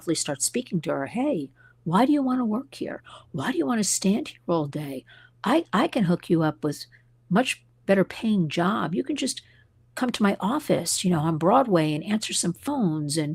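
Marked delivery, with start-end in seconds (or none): 1.1-13.2 sweet, low-key, gently pitched, friendly coaxing. Retelling a woman recruiting a security guard at a bank: imitating someone speaking softly. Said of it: "I hear this woman come in very softly".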